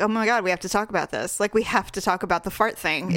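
ordinary delivery

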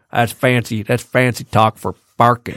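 put-on country accent. Explaining a fancy word to a co-host: Brad Pitt accent. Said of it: "that's such a good accent".

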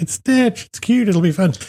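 high, gentle coaxing voice. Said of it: "And I'm like".

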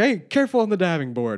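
mock yelling, acted-out shout. Retelling how a man at a party called out to the kids: retelling a yell at kids. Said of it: "he's like yelling at the kids like".

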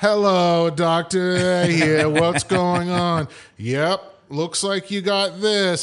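put-on very slow, bored voice. Imitating a doctor who was bored by the whole thing: imitating a bored doctor. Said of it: "he was just bored by the whole thing".

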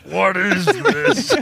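high cartoon dad voice. Describing a strange baby on the Simpsons, the speaker voices the dad: old Homer Simpson voice. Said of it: "Like the old Homer voice".

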